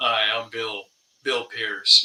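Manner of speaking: slow, on-air radio announcer voice. Recalling a man he knew who changed on air, imitate Bill Pierce's radio voice. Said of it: "his voice would be completely change".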